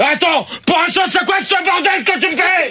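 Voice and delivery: high, furious shout.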